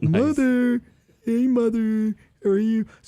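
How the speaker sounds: very high, slightly froggy puppet voice. Imitating how someone chose to voice Ed Gein speaking to his mother, a little like Kermit. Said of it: "he sounds a little bit like Kermit".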